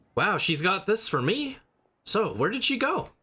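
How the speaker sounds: put-on Southern-accented speech. Replaying a game scene, voicing Xinyan's lines with a southern accent. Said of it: "they actually did give Xinyan a like southern accent".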